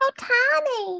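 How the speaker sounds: put-on squeaky, very high voice with southern accent. Retelling a woman's remark, in a little southern Minnie Mouse voice. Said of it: "This little like southern Minnie Mouse voice".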